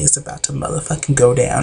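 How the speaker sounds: ordinary delivery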